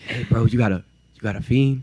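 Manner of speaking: mock whispering. Retelling a stranger in the school bathroom asking something: imitating someone whispering. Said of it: "why are you whispering?".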